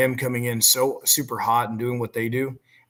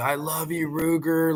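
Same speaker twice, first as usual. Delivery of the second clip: put-on stretched-out cheer like a fan in stands; 4 semitones higher than usual. Retelling what is yelled at live games: imitating own yell. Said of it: "yells out from the top of my lungs".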